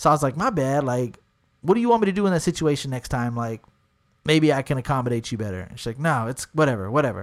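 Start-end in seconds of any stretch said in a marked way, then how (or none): 6.0-7.2 mock-annoyed tone, much lower. Retelling her reply after he apologized and offered to do better, mock-annoyed. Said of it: "She's pretty pissed off".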